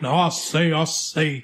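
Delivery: very slow, drawn-out southern rooster drawl. Speaker describing a man's southern drawl to listeners, Foghorn Leghorn voice. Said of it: "like Foghorn Leghorn's like".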